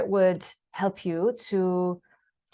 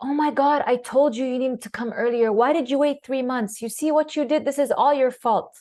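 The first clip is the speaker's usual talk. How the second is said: harsh, blaming, pitched-up scolding; 5 semitones higher than usual. Showing how staff scold a patient: harsh scolding tone. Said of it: "using this harsh tone of voice".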